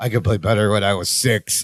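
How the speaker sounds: mock mutter under breath. Retelling a muttered aside to Jennifer: imitating muttering under his breath. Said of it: "as an aside under his breath".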